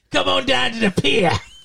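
put-on sultry English accent. Showing what a sexy English accent sounds like: mock sexy English accent. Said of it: "What's a sexy English accent?".

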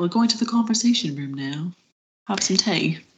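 put-on period-drama upper-class society accent. Picturing people going to the conversation room after dinner: Bridgerton characters' accent. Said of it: "with exactly that accent".

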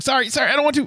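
goofy, squeaked-out, very high voice. Imitating an actor apologizing goofily in a fight: goofy Jackie Chan apology. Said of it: "very Jackie Chan-esque".

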